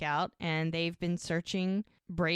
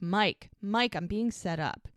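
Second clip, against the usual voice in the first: ordinary delivery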